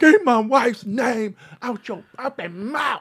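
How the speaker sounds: put-on very high shout, close to tears. Retelling how he walked on stage and reacted: imitating an almost tearful yell. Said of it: "almost tearfully yelling".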